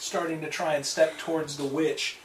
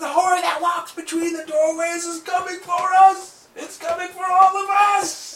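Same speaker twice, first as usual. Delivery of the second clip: terrified shriek, very high pitched and very loud; 9 dB louder than usual. A narrator voicing a woman's warning as horror goes wrong, screaming. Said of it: "she's screaming".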